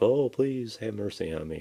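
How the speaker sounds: pleading, begging tone. Voicing a captured action figure in binders, pleading for his life. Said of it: "like he's pleading for his life".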